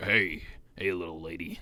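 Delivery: rough raspy drawl, very low and slow. Asked how to talk raspy, showing it with a raspy voice. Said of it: "How do I talk raspy? Like".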